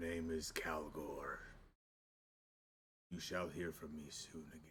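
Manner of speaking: soft, low, gentle delivery. A voice answers after being asked its name, in a much softer voice. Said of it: "You hear a much softer voice this time come through".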